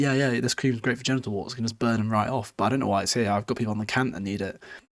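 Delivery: ordinary delivery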